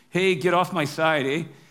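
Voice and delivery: put-on Canadian accent. Retelling two guys quoting a movie, one speaking in a Canadian accent. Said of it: "he says in his best Canadian accent".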